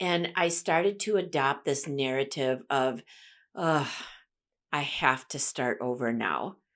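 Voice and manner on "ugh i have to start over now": deflated, defeated, discouraged, sagging groan. Speaker acts out their own past self-talk, imitating discouraged self-talk. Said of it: "doesn't that just sound discouraging?".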